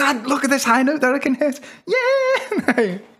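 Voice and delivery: buzzing full-voice, very high, swooping excited shout. Retelling calling out to Dad about a high note: imitating excited full-voice shouting. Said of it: "in full voice, like, you know, but buzzing off it".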